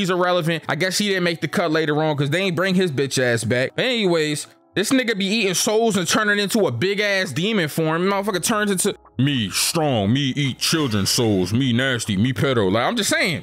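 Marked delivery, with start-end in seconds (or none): 9.2-12.7 very low, deep, slow, lumbering caveman voice. Recapping an anime villain who talks like a caveman; caveman voice.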